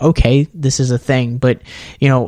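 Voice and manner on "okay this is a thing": ordinary delivery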